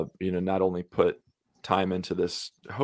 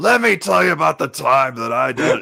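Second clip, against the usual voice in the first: put-on very loud, rough drunk voice; 8 semitones higher, 10 dB louder than usual. Picturing a character chatting players up in a bar: Grim as the Hive City drunk. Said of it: "Hive City drunk".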